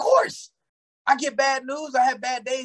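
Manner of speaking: very high, peppy, energetic motivational-speaker voice. Retelling his answer to people who say he never has a bad day, imitating a man of positive videos. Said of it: "why did you sound so much like him".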